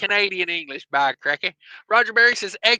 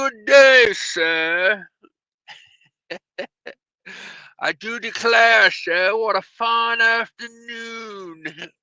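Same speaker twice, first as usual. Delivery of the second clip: terrible, slow, put-on British accent; 4 semitones higher than usual. Describing what he says at the station, bad put-on British accent. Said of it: "It's the worst British accent ever".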